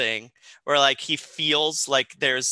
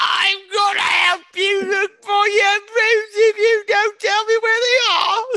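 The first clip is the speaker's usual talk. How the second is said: very high put-on London Cockney accent; 6 dB louder than usual. Repeating the boy's line slower as asked: Cockney London accent. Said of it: "Cockney London right now".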